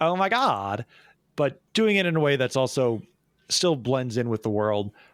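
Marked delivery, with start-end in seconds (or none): 0.0-0.9 put-on classic high Valley Girl accent. Describing how a character should sound: Valley Girl accent. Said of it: "the Valley Girl accent".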